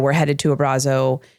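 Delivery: ordinary delivery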